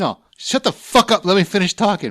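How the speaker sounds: heated, worked-up outburst, loud and high-pitched. Retelling how another speaker got heated: imitating someone getting heated. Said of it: "He was getting all heated".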